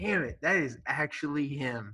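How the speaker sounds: ordinary delivery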